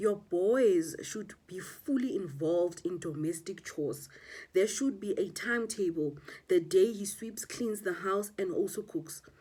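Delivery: plain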